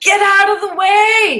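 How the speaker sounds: yelling, high and slow.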